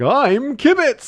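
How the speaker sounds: fifties radio announcer voice, very high and loud. Describing a video maker's commentary, mimic his introduction: Kibitz as a fifties radio announcer. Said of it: "he sounds like a fifties radio announcer".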